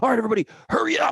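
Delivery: very high, shrill, loud, bossy drill sergeant bark. Explaining how urging a group to hurry goes wrong, drill sergeant bark. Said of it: "like a drill sergeant".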